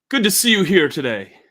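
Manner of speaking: warm, hearty welcoming tone. As the Blue Rat's owner greeting the guests with a raised glass, friendly tone. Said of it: "he's got a friendly tone".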